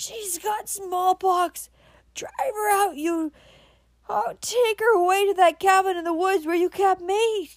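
very high, shrill, terrified scream. A man on his bed cries out to Cameron, screaming in fear. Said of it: "His voice rose in a scream of fear".

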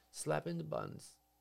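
normal talking voice

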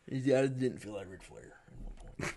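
low, serious, dialled-back straight delivery. Asked to do it again, quoting in a serious Ric Flair impression. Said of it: "Do it again".

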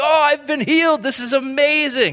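high, jubilant, joyful shout. Acting out a healed person bursting through the doors: imitating someone shouting joyfully. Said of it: "just shouting like".

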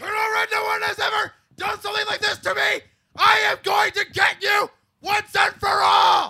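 very high, very loud, shrill, top-of-the-lungs scream. Retelling a wrestling promo, imitating a wrestler screaming at the top of his lungs. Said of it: "he screams at the top of his lungs".

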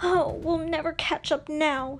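with a groan. Narrator reads Nakoma, far behind in a canoe race, groaning. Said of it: "Nakoma groaned".

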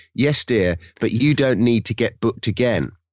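ordinary delivery

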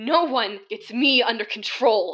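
slow, growling delivery. A narrator reads a captive's retort to the ringleader, growling. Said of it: "Lucy growled".

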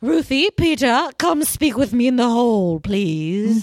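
put-on British accent. Retelling her calling two people into the hall: put-on british accent. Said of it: "I made her British in my head".

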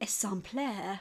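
sampler in a lovely French accent. Explaining the word sampler comes from an old french term: french accent. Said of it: "I'll try and say this with a lovely French accent".

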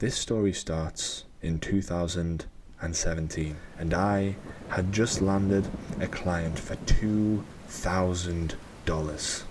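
eerie, spooky campfire-tale storytelling voice. Speaker starts telling listeners a client story in a spooky voice. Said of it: "I'm going to do my spooky voice".

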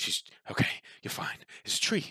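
whispered, heavy-breathing, hushed and scared. Acting out how you react in the game, with put-on heavy breathing. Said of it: "your breathing gets heavier".

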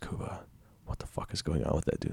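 soft, hushed whisper.

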